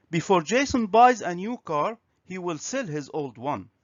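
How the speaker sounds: usual speaking voice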